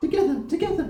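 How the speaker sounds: small, tiny, very high voice. The narrator voices something speaking in the listener's mind: small high-pitched voice. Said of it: "you hear a small, high pitched voice in your mind".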